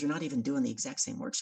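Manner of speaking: plain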